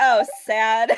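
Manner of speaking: put-on sarcastic robot voice. Repeating a droid's line from the movie: sarcastic D-O droid voice. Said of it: "it sounded so sarcastic".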